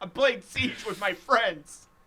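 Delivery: high, loud, slow, fed-up yell. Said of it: "the owl made me mad".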